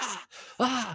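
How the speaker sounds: very high, frantic, put-on freaked-out yell. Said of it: "he's, like, yelling".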